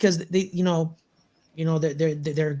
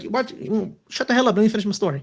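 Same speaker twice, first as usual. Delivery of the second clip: mock snappy voice, full of attitude; 4 semitones higher than usual. Retelling a TV scene where the priest snaps back: imitating a priest with attitude. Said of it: "The father got a little attitude".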